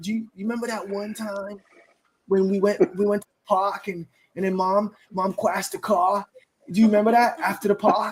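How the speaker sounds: forced, put-on Boston accent on every word. Retelling how she told a story about mom crashing the car, imitating a Boston accent. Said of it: "but it was Boston, bro".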